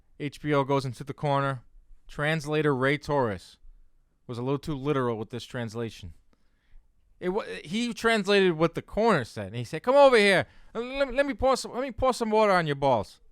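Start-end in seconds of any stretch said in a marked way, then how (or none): 9.8-13.1 raised, loud, slightly high-pitched voice. Act out the translator relaying what the corner said, as a Ray Torres impression. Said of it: "That was a good impression too".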